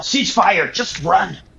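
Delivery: yelling, shouting. Playing the boss of a crew under attack, yelling orders. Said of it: "I'll just yell".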